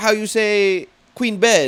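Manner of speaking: put-on strong Vietnamese accent, high, very slow broken English. Imitating an actress's lines from a movie: imitating a strong vietnamese accent. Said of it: "She had a very strong Viet-, Vietnamese accent".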